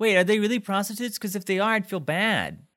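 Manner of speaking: mock sincerely concerned, caring, high voice. Retelling Kyle asking about strippers: Kyle's concerned question. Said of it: "concernedly says".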